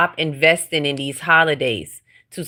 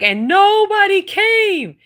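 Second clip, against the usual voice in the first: very high, tearful, sobbing, drawn-out crying voice; 3 dB louder than usual. Retelling a viral video of a woman who cooked but nobody came: imitating a crying woman. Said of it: "the lady that I saw crying".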